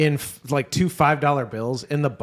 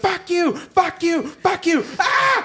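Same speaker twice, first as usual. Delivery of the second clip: put-on very high, stretched, drawn-out screaming; 3 dB louder than usual. Retelling a woman at a payphone screaming at somebody: imitating a woman screaming. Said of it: "a woman at a payphone screaming at somebody".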